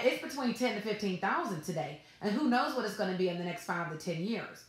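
confident, self-assured, certain tone. Demonstrating a confident tone while stating the stats: confident. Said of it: "Notice the difference in my tone. Confidence, it comes through".

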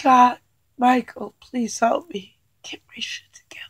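speaking while crying, in tears. Calling on Michael while reading for her daughter Cassie, crying. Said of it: "I can't stop crying".

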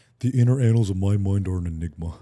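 deep, loud, pushed-out put-on cartoon voice. Showing another speaker a Patrick Star impression. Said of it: "I can do a really good Patrick Star one".

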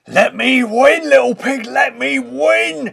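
very loud, very high, rough raging screech. The furious wolf, now behind the three pigs, shouts at them. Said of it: "he shouted".

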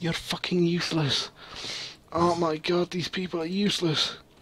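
high, pained, hurt voice, sounding in real pain. Playing a game while a listener watches, the speaker voices their hurt character: pained, hurt voice. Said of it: "it sounds like you're in pain".

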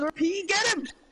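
high, excited shouting.

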